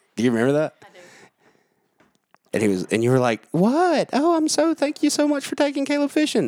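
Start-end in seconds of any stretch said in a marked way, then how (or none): 3.5-6.5 very high, deliberately terrible put-on voice. Retelling a church encounter to Sally, the speaker does a terrible impression of Sally. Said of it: "i have a terrible impression of you talking".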